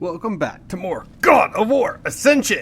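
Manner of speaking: rough tough-guy voice. Host welcoming viewers back to the series, in a tough and gruff voice. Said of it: "Gotta say it with the tough and gruff voice".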